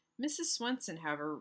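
ordinary delivery

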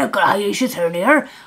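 slight West Country accent. Giving followers a hospital life update, slipping into a West Country accent. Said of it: "I went a bit West Country there".

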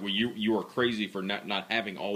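plain

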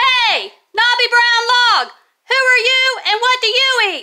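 shrill yell, very high and very loud. Narrator reads the wide mouth frog calling to a knobby brown log: shouted. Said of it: "shouted the wide mouth frog".

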